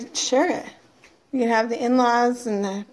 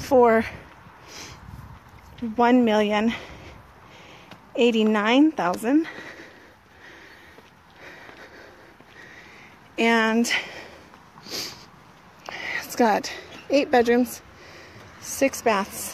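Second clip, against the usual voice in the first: breathless, out of breath. Filming a home tour video, giving the listing price, out of breath. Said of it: "I'm out of breath".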